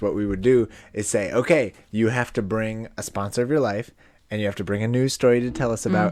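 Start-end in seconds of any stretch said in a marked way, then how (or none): none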